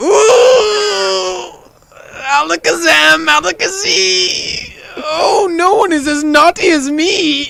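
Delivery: very high, very loud, shrill put-on wizard, drawn-out ooh. Improvising a silly scene, playing a wizard: wizard voice. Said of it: "I sound like a wizard".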